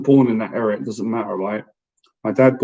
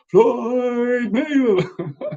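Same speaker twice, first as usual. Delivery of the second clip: very high ring announcer call, name drawn out; 8 semitones higher than usual. Acting out the guy calling out the champion's name after his titles, imitating a boxing ring announcer. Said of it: "He would say all that and he'd say".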